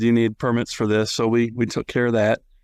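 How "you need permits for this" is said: plain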